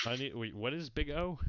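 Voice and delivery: ordinary talk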